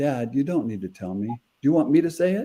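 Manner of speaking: tearful words said while crying. Father retells his daughter's words at the glass as both cried, retelling tearful words. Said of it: "And we're both crying".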